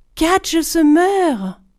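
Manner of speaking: high, loud, frightened cry of alarm. A narrator reads Hans looking toward the village and crying out; frightened cry. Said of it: "s'écria d'une voix effrayée".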